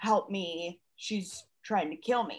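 low, hushed whisper under the breath. Picturing the moment of a hug, saying what she would have whispered: whispering. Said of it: "this would be the right time to whisper".

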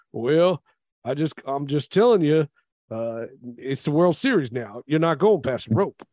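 put-on Southern rural American accent. Retelling what a baseball manager said on the radio show: Charlie Manuel's country accent. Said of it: "Charlie Manuel with his, like, his country accent".

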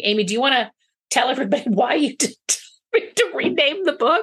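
speaking through laughter. Talking about renaming the book, turning to Amy, laughing while asking. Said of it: "I'm laughing".

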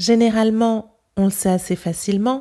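native Parisian French accent. Comparing accents, speaker repeats a French sentence in a Parisian French accent. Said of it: "in my Parisian accent".

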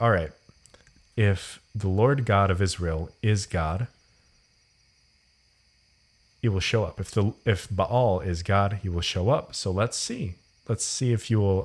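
ordinary delivery

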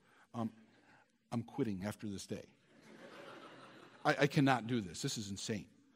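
slow, hushed, drawn-out whisper. Recalling a call to his fiancée from the school office, retelling a whisper. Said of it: "had to go in the school office and whisper".

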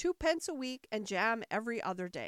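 ordinary delivery, nothing marked

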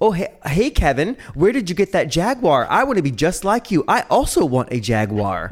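mocking, sing-song put-on American accent. Retelling how a British man imitates an American to call him stupid: mocking American accent. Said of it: "he said this in an American accent".

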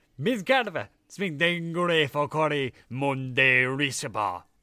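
very loud, slow, booming, space-filling voice. Game master voices a voice booming out around the players in a cavern; loud booming voice. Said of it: "a loud voice booms out all around you".

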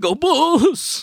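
very high-pitched squeal at the top of range. Reviewing a movie, the speaker repeats the line that cracked them up: squealing like Bill Murray. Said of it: "Just the way he said it".

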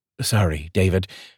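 ordinary delivery

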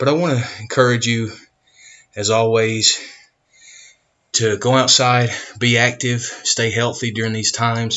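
slightly winded, a little out of breath. Speaker talking to listeners while recording right after exercising, a little out of breath. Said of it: "You can hear I'm a little bit out of breath".

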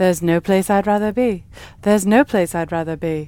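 put-on lisping, drunk-sounding French-British accent. Explaining the feeling of a dream home, doing a bad Dorothy impression. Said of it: "I don't think Dorothy had that accent".

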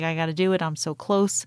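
ordinary talk

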